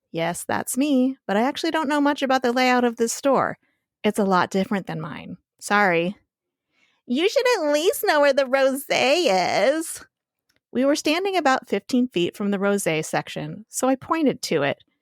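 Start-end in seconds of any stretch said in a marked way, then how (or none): 7.0-10.0 put-on sleepy, spaced-out valley girl voice, pitched up. Retelling what a woman in a store said, imitating a valley girl on muscle relaxers. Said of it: "speaks like a valley girl on muscle relaxers".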